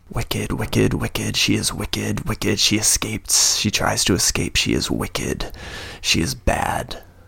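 muttering under his breath, mumbling. Voicing a prisoner overheard by the players: muttering under his breath. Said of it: "is still muttering under his breath".

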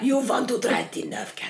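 loud, menacing put-on vampire voice. Speaker asking the other person a question, in a Dracula voice. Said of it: "That sounds like Dracula's fucking saying it now".

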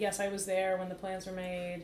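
ordinary talk

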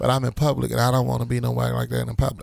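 plain

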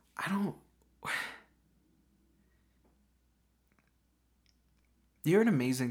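tearful voice right on the edge of crying. Voicing a woman telling a friend she's amazing, acting close to crying. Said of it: "I think she's close to crying".

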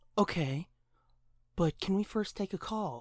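put-on mocking whisper. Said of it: "she's matching the fucking whisper, mocking the lady".

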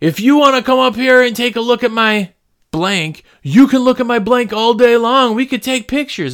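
high hollering. Speaker retelling what a man yelled from the top of the stairs, retelling a man yelling. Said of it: "He's yelling at him".

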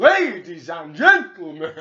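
very loud booming announcer call, swooping up and down. Showing the other speaker how to do Howard Finkel, Howard Finkel impression. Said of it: "his voice is like a fucking roller coaster".

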